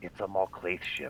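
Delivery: very quiet, turned-down, breathy near-whisper. Playing his character, being stealthy, quiet with the volume turned down. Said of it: "he turns the volume down on his speakers".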